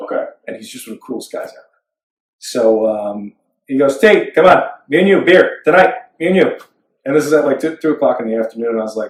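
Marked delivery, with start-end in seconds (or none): 4.0-6.6 put-on higher Midwestern-sounding accent. Speaker retells what Kev said to him, in Kev's Midwestern accent. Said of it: "this accent that like sounds like he's from the Midwest".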